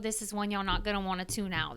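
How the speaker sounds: ordinary talk, nothing marked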